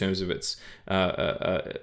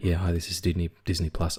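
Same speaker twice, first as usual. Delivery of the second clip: put-on seductive, sexy voice; 3 semitones lower than usual. Speaking as a streaming service, put-on sexy voice. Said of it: "This is me doing a sexy voice".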